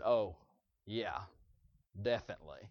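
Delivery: heavy, low, soft sarcasm, insincere. Retelling how a woman answered her question: mimicking a sarcastic reply. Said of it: "it was so sarcastic".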